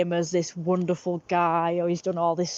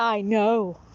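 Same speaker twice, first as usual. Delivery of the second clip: put-on abrupt, curt delivery, higher; 3 semitones higher than usual. Retelling how he answered when confronted about not meeting: imitating a very abrupt reply. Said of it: "in this very abrupt voice".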